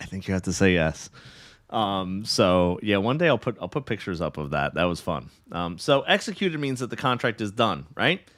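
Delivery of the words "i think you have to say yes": whisper, lower in pitch. Retelling a proposal, quoting what he told his embarrassed wife: imitating a whisper. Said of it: "I had to whisper in her ear".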